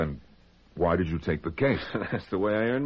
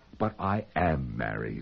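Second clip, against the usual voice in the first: slower, put-on innocent ingenue voice; 8 semitones lower, 3 dB quieter than usual. Retelling what she said to him, in her best mock ingenue voice. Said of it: "in her best ingenue voice said".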